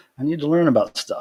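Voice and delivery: ordinary talk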